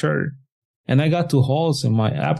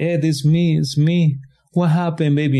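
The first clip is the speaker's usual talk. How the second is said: mock screaming, higher pitch; 3 semitones higher than usual. Recounting being confused, the speaker acts out a woman's words to them, imitating someone screaming. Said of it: "And she's screaming".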